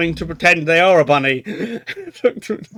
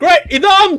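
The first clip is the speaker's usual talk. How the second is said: shouting guard character voice, higher pitch and louder; 12 semitones higher, 4 dB louder than usual. Voicing guards reacting to a player drawing a pistol: voicing a guard shouting. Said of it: "and then they're going".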